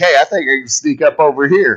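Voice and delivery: ordinary talk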